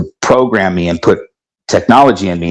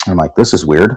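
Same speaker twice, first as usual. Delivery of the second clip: normal talking voice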